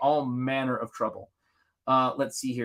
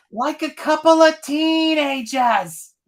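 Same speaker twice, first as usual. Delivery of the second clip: very high, very slow, loud, broad New England drawl; 7 dB louder than usual. Retelling a friend's heckle from a passing car: imitating a thick new england accent. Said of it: "thick New England accent".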